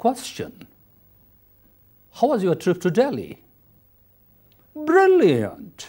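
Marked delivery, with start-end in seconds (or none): 4.7-5.9 enthusiastic, excited rising then falling pitch on brilliant. Teaching English intonation, answering how the trip to Delhi was, with an excited rise-fall tone. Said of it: "It shows your excitement".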